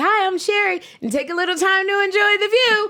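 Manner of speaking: put-on very high, loud little-kid voice. Recalling her early days on the view, in a high childlike voice. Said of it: "literally my voice was".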